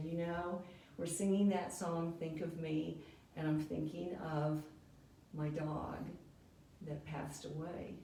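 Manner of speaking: mock earnest, sugar-sweet, sincere voice. Retell her serious answer when asked what was wrong, imitating a sweet, sincere voice. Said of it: "in the sweetest, most sincere voice".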